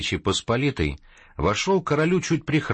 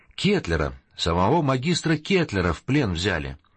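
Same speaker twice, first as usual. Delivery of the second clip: ordinary delivery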